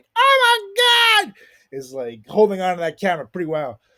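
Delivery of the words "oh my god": very high, shrill, loud scream full of horror. Describing the camera lady in a shark video: imitating a horrified scream. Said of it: "you can see her screaming like".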